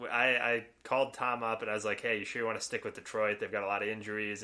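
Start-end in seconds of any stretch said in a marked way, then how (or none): none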